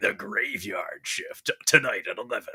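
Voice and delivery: rough, gravelly movie promo announcer voice. Recalling an announcer promoting The Graveyard Shift airing tonight, gravelly announcer voice. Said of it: "some guy with a gravelly voice, some announcer going".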